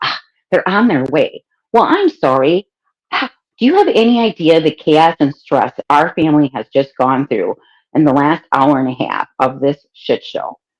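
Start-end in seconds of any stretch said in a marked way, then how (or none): 0.0-1.4 mock short, dismissive, snippy delivery. Retelling what the lady said on the phone: imitating a snippy tone. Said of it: "the lady got a little snippy".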